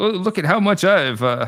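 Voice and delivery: put-on Southern gentleman voice. Imitating the commissioner bragging about his department: impression of the commissioner. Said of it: "this is my impression of him".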